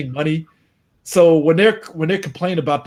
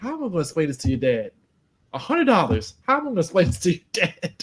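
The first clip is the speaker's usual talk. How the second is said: mock fed-up exasperation, torn between anger and worry; 4 dB quieter than usual. Retelling what the kid's mom said to him, imitating a mad mother. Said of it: "She's mad".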